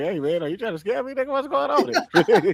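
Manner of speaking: swooping, dripping, needling mock sarcasm. Retelling what someone said back, imitating a sarcastic tone. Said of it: "he so goddamn sarcastic".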